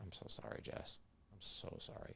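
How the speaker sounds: slow, soft, apologetic close whisper. Retelling an apology to his wife while hugging her: retelling a whisper. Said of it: "And I just whispered".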